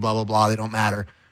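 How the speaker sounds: low-pitched, scoffing, dismissive tone. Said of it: "you'll scoff at me and say".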